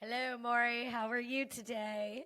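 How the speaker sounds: attempted, unconvincing, bad British accent. Co-host greeting the host at the show's start, attempted British accent. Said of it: "trying to be a British accent".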